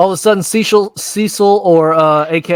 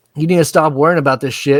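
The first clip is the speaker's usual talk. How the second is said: ordinary talk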